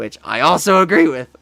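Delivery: very loud voice breaking and cracking. Answering a viewer's Star Wars question, the speaker's voice cracks. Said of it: "Voice crack, sorry".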